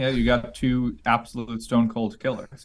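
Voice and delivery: ordinary talk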